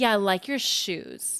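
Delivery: insincere, mocking, sarcastic, swooping sing-song tone. Example of a sarcastic compliment about shoes, sarcastic. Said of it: "if you're like sarcastic and be like".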